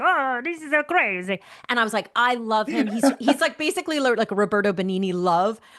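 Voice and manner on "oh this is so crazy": put-on high, slow froggish voice. Speaker recalls an Italian man character they performed, put-on froggish voice. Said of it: "He had this kind of froggish voice".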